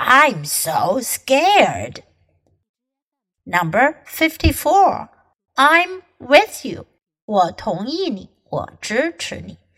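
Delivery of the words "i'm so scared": sarcastic, every word stretched long, swooping pitch. Showing a learner the mocking reply to a threat: sarcastic, stretching each word. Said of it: "拉 长 每 个 字 来 说 ， 表 示 讽 刺".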